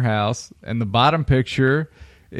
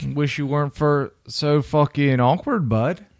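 put-on Canadian accent; 3 semitones higher than usual. Asked by another speaker to read a meme aloud, in a put-on Canadian accent. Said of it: "read that with your best Canadian impression".

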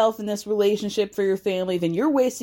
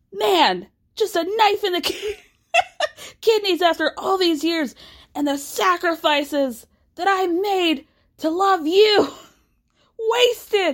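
put-on angry screaming, pitched higher; 9 semitones higher than usual. Retelling a reality show scene, imitating Kody screaming. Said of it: "And he starts screaming".

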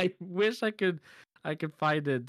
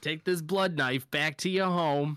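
badly done put-on New York accent; 2 semitones higher than usual. Joining the retelling, doing the cat scene in a New York accent. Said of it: "That is a shit accent".

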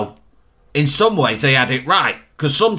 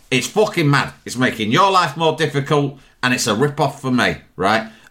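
ordinary delivery

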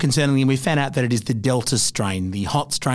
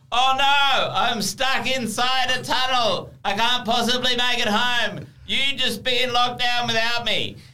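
very high, loud shout, echoing as from a tunnel; 11 semitones higher than usual. Explaining a plan to fake being stuck, the speaker acts it out, shouting as if in a tunnel. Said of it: "I'm just going to shout very loudly so that it sounds like I'm inside a tunnel".

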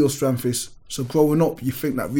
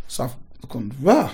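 plain

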